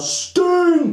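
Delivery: mock yelling, high and loud. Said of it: "Triple H is gonna yell".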